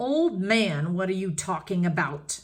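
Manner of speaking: loud, menacing growling snarl. A narrator reads a character speaking to an old man, loud growling voice. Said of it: "He spoke in a loud growling voice".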